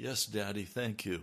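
imitated bright, cheery tone. Retelling a childhood reply to his dad: imitating own bright cheery reply. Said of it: "Sometimes a bright, cheery".

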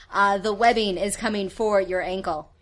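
ordinary talk

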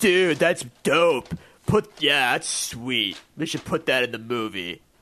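put-on dim-witted, clueless teenage dude-bro voice. Imitating a director reacting to a drawing: Zack Snyder impression. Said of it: "That's my Zack Snyder".

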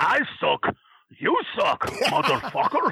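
put-on Russian accent. Retelling how Nikita yelled that he sucks: Nikita's Russian accent. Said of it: "is he doing it in the Russian accent?".

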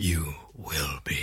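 very quiet, hushed, theatrical delivery. Showing how a line from an old take actually goes: dramatic delivery.

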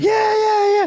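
put-on, very high-pitched screaming cheer. Retelling watching a fight while his companion dozed off; re-enacting own screaming. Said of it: "I was like screaming my head".

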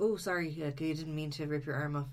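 ordinary delivery

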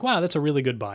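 ordinary delivery

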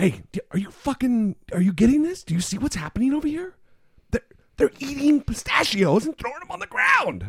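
half-whispered, pitched way up high. Retelling leaning over during a show to half-whisper to the person beside them, half-whispering. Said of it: "I'm whispering".

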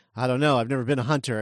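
mock flat, monotone delivery. Retelling how a character reacted to a bear: imitating a monotone delivery. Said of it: "so monotone about it".

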